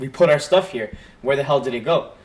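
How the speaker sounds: plain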